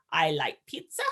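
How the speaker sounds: robotic, machine-like voice, dead level pitch. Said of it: "He talked in a really robotic voice".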